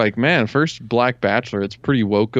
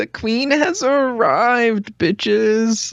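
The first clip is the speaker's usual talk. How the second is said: play-acted very high, self-conscious, hesitant, drawn-out voice; 11 semitones higher than usual. Retelling how she said her line on entering: imitating an unconfident line. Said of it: "how unconfidently she said that".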